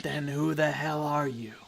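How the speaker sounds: sibilant hiss with a wavering, ululating warble. Voicing someone behind a stuck door, answering a player, in a hissing, ululating voice. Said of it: "a voice from inside that, you know, hisses and ululates".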